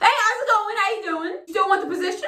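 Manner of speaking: wired, jumpy, jittery, very high-pitched voice. Retelling a recruiter's phone call to the speaker, imitating a jittery recruiter. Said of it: "This motherfucker sounds jittery as hell".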